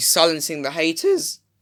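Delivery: voice cracking mid-phrase on the words. Praising a player's performance when the speaker's voice suddenly goes: voice cracking. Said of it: "What happened to my voice?".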